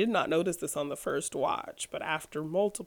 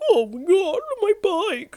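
very high, very loud, shrill, whiny dork wail; 13 semitones higher, 10 dB louder than usual. Discussing how an actor played a role, the speaker imitates a whiny guy.

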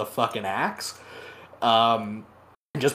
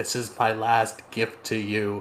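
imitated whisper. Retelling a battle story, quoting a dying character's last words: retelling a whisper. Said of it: "kinda whispers".

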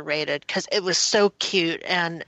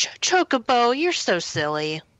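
fond, charmed fatherly voice, pitched up; 6 semitones higher than usual. Imitating how Sid talks to Chocobo in the game: imitating Sid talking to Chocobo. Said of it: "the way Sid talks, talks to Chocobo".

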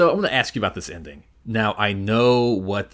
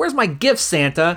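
mock pushy, rude, high-pitched tone; 8 semitones higher, 4 dB louder than usual. Retelling the daughter's line to Santa: imitating a rude demand. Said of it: "She's kind of rude".

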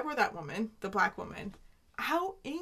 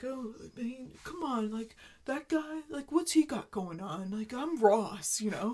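put-on thick-tongued voice. Imitating a character the other speaker just brought up, Ross fat tongue voice. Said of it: "his fat tongue voice".

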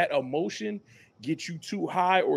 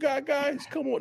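put-on cracking teen voice, much higher pitch; 8 semitones higher, 3 dB quieter than usual. Describing how he yells at the vets without any cracking, mock puberty voice crack. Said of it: "Ain't no cracking in his voice".

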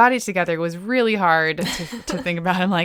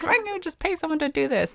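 high, whiny, cranky gripe. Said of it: "I was getting cranky".

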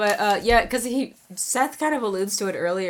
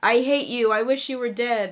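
half-yelled, hateful outburst; 4 semitones higher than usual. Retelling a scene where a character yells at his dad: imitating someone yelling. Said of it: "and then he yells".

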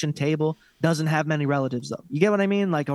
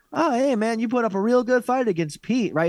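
high, patronizing sarcasm with fake friendliness; 7 semitones higher than usual. Acting out a podcast host mocking a cringeworthy guest: mock sarcastic, patronizing tone. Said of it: "It's all very sarcastic, and it's patronizing as fuck".

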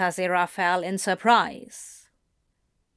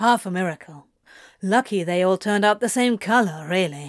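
ordinary delivery

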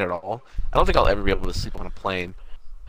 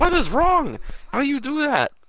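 mock yell in a very high, shrill voice. Telling a story, the speaker acts out what a man yelled; retelling a yell. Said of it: "He was yelling like".

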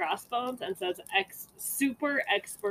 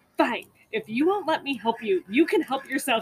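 mock fed-up, mad, raised outburst; 3 semitones higher, 5 dB louder than usual. Retelling what a mom said to two people laughing: imitating an angry mom. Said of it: "my mom got so mad".

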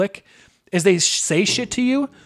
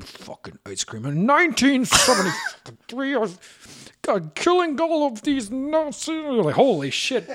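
mock old man mumbling under breath, much higher; 8 semitones higher than usual. Describing a grandpa asked for ice cream, imitating a grandpa mumbling under his breath. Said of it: "mumbles underneath his breath".

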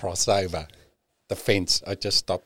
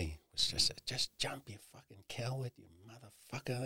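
put-on evil, taunting voice, higher, quieter, faster; 4 semitones higher, 12 dB quieter than usual. Speaker recalls the voice he heard at the edge: imitating an evil inner voice. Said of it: "it was fucking evil".

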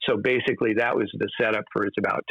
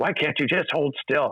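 mild, high scolding yell; 5 semitones higher than usual. Recounting how he'd yell at you while waiting to enter, retell his yell. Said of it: "And he'd yell at me".

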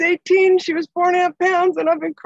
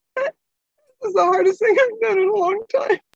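speaking through tears, tearful crying voice; 3 semitones higher than usual. Speaker opening up to the people they need, crying. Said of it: "And right now I'm crying".

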